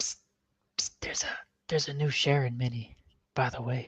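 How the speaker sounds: secretive, hushed stage whisper. While getting the next map ready, telling the others about a new mini, whispering. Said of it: "Why are we whispering?".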